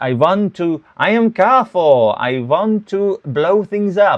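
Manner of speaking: loud, booming character voice, every word stretched out. Imitating how Carthor sounded, like the Count on Sesame Street. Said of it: "he sounded like the Count on Sesame Street".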